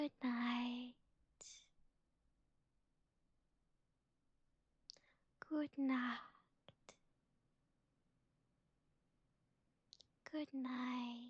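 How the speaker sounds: soft, soothing, gentle voice. Saying good night to listeners: soft, soothing, gentle voice. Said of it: "listen to my soft and soothing and gentle voice".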